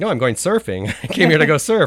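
loud, high voice, laughing while speaking. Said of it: "I'm like".

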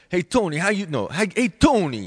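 put-on Brooklyn Italian accent. Recalling a line they had to say in a role, in a brooklyn italian accent. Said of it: "like some Brooklyn Italian accent".

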